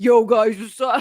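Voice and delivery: loud attempt at a deep voice, falling short. The speaker attempts the deep voice of a woman who smokes heavily. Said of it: "I can't even make my voice get that deep".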